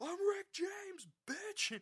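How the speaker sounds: mock yelling. Retelling how a group in a movie theater kept yelling: imitating people yelling. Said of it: "this one group of people kept yelling".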